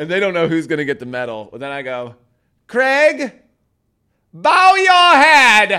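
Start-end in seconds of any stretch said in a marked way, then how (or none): 2.7-5.8 very loud, very high, drawn-out, booming bellow. Describing a medal ceremony with kids, retelling an old-school yell. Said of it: "I yell it like old school".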